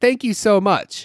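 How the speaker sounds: put-on, super sarcastic tone. Retelling what the cashier said, imitating a super sarcastic tone. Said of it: "in a super sarcastic tone".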